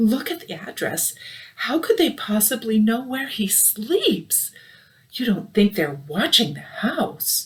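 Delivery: trembling, wavering, quivering high-pitched voice. The aunt tells the uncle to look at the address, in a quivering voice. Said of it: "saying in a quivering voice".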